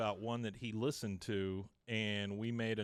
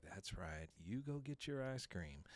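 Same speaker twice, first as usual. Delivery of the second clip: put-on mutter under breath, quiet, then quieter; 9 dB quieter than usual. Retelling a character watching the others leave: imitating muttering under breath. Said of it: "under his breath".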